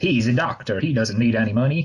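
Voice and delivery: put-on Southern accent. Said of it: "that's my brilliant Southern accent".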